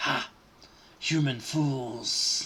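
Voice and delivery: hissing swarm voice, many crying in unison. Game master voices a serpent swarm blocking the way, crying out in many hissing voices in unison. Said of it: "A thousand hissing voices cry in unison".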